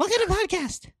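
very high, exaggerated, over-the-top squeaky voice. Joking about how their voice will sound if they get fatter: put-on extra high-pitched voice. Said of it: "my voice is gonna be like".

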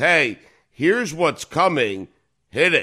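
ordinary talk

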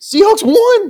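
loud yell.

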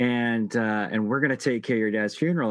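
plain

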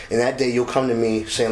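ordinary delivery

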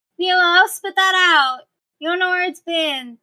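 very high voice, muffled, from above. Narrating a game scene, a character held by a lizard's tongue calls out, slightly muffled. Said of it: "even though it's a little muffled".

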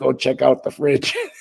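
put-on gravelly, rough voice. Retelling what the coach said to you about the fridge, imitating a coach's gravelly voice. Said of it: "he had that gravelly voice".

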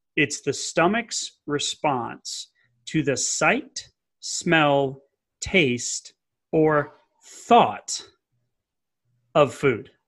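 very slow, deliberate, word-by-word delivery. Explaining the first phase of digestion to a listener, saying it really slowly. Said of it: "I'm going to say this really slowly".

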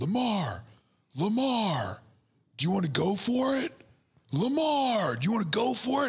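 put-on very high, slow, drawn-out yell. Retelling a coach yelling to his quarterback on the field: imitating John Harbaugh yelling. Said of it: "he's yelling to the field".

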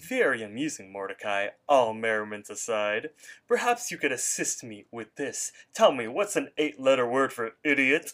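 put-on smart-talking voice. Retelling a scene where Rigby answers Mordecai, talking all smart. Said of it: "he's talking all smart".

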